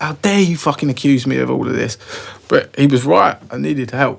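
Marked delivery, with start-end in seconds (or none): 0.0-1.7 mock furious, livid angry voice. Retelling accusing a brother of lying: retelling own livid anger. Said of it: "I was fucking livid with my brother".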